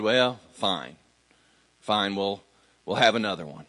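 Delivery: low, reluctant, begrudging giving in. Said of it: "kind of begrudgingly".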